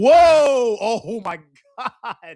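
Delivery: booming, long-stretched, loud startled whoa. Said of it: "I'm sorry I just yelled in y'all's ears".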